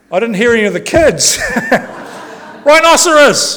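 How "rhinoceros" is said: high, loud call of rhinoceros. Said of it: "wait till I get to rhinoceros".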